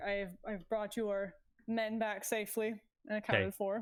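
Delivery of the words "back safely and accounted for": normal talking voice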